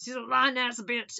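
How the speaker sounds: put-on hillbilly man's voice. Discussing a man who got away from a lying woman, the speaker voices him in a hillbilly man voice. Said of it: "That's my man voice".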